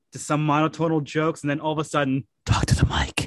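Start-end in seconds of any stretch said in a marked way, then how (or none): 2.4-3.2 fake ASMR whisper, lower pitch. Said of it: "A S M R".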